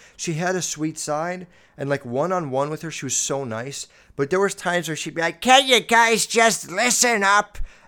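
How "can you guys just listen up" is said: put-on very loud, slow, rasping old hag voice. Imitating a former teacher addressing the class, raspy old hag voice. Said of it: "raspy voice, like, old haggry".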